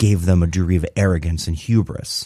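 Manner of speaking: ordinary delivery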